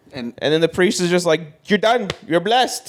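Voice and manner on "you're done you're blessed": put-on Italian accent, pitched up. Acting out a priest finishing an exorcism, in a put-on Italian accent. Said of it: "What was that accent?".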